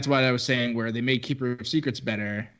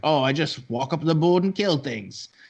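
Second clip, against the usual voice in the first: weaselly, sneaky, boastful little voice; 4 semitones higher than usual. Retelling how a winner answered when asked his secret, weaselly Mr. Burns voice. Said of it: "he also said it in like a Weasley way, like he was like Mister Burns".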